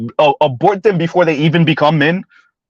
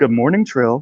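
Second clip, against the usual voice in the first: tender, soft, gentle voice, bordering on flirty; 5 semitones lower, 3 dB quieter than usual. Trying out a soft voice to say good morning to Trail. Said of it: "with the soft voice".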